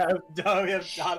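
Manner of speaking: speaking through laughter. Reading the line aloud with another person, laughing while reading. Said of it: "reading it laughing".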